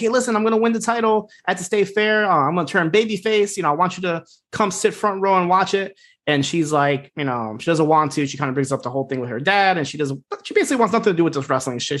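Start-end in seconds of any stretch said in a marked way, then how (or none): 0.0-6.0 put-on, fired-up, eager, excited enthusiasm. Retelling a show scene where a character tells his mom: imitating excited speech. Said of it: "he's all excited".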